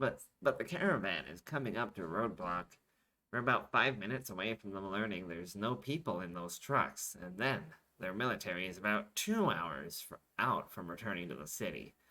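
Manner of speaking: ordinary delivery, nothing marked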